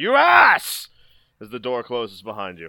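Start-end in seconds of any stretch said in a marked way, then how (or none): 0.0-0.9 very high-pitched, shrill yell that tails away. Game narrator describing Aramindor's last words as the door closes behind the players: Aramindor yelling, tailing off. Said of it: "tailing off and yelling".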